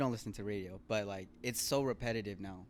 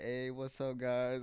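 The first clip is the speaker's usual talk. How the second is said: put-on raspy voice; 2 semitones higher than usual. Imitating a celebrity phoning the morning radio show: raspy voice. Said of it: "little raspy voice".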